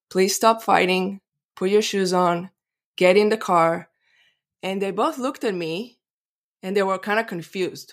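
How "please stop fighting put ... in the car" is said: put-on serene, very peaceful, calm voice. Mother recounting telling her fighting kids to get in the car, retelling a peaceful voice. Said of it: "in a very peaceful voice".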